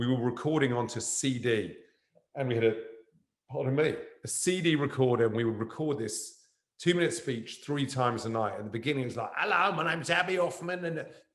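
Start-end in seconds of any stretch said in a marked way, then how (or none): 9.4-11.0 bad put-on Cockney accent, pitched high. Actor recalling early recordings of a two-minute speech, in a terrible Cockney accent. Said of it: "this kind of terrible Cockney accent".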